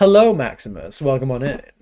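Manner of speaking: silky, smooth and easy voice. The speaker imitates how the listener used to greet him when he joined: retelling a smooth greeting. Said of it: "it just sounded so smooth".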